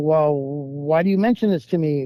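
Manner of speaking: normal talking voice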